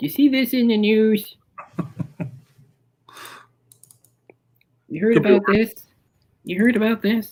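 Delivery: late-night host style, pitched way up high. Speaker tries to get into character, mimicking how Jay Leno opens his bits: Jay Leno impression. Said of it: "I can get into character".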